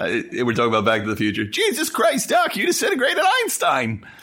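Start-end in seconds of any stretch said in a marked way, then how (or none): 1.5-4.0 high, whiny voice. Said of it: "now I know why I sound so fucking whiny".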